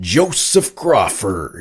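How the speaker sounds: teasing, showy, swooping sing-song call. Retelling how a fellow actor would say his name: imitating Tom Hearn's voice. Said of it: "in that voice".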